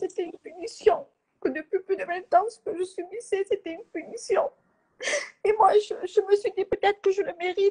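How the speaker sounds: speaking through tears. Speaking to viewers on a livestream, crying while talking. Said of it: "j'ai pleuré sur le live de votre frère".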